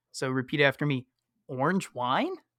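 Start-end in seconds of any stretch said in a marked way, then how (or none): 1.4-2.3 a little confused, unsure, slightly puzzled tone. Leading vocal warm-ups, showing how to say it: a little confused. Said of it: "like you're kinda a little confused".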